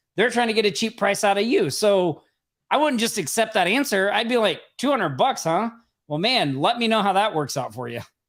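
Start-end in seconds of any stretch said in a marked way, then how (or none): 4.8-8.1 play-acted condescending, patronizing tone. Speaker acts out answering a lowball price offer, condescending tone. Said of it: "almost a condescending tone".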